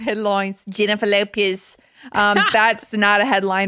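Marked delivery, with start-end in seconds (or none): 0.7-1.8 put-on Australian accent. Announcing a podcast headline for fun: Australian accent. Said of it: "I like saying that in an Australian accent".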